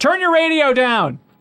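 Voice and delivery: very high-pitched, playful, joking shout. Greeting a caller as a joke: pretend yell. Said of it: "I just wanted to yell that".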